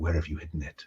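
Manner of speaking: barely audible, low half-whisper with a hard edge. A voice half-whispers to someone held at knifepoint: half-whispering. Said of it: "when the whisper comes".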